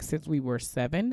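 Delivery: ordinary delivery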